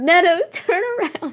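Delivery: all-out shrill screaming, very high. Playing a character in a game, screaming at neto to turn around: screaming at neto. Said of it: "I'm, like, screaming this at Neto".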